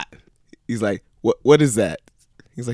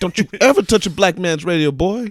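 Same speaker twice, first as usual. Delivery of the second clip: higher put-on angry movie-character voice; 7 semitones higher than usual. Retelling a movie scene where a passenger changed the radio: imitating Chris Tucker. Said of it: "Chris Tucker got him in the car".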